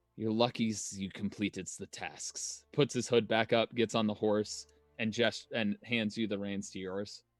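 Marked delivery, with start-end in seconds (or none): 0.2-2.6 quiet, weary, tired words spoken on a sigh. Voicing a character answering a companion after a sigh: sighing in character. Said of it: "I'll sigh and just be like".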